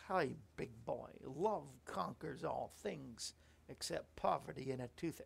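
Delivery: low-pitched voice with a creaky, gravelly texture. Quoting a famous line on Toothache Day: horrible Mae West impersonation. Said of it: "that was a horrible impersonation".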